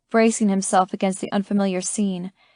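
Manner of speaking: plain reading voice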